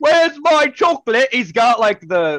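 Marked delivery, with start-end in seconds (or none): 0.0-1.3 shrieked, very high scream. Retelling a movie scene where a greedy kid screams: imitating Bruno screaming.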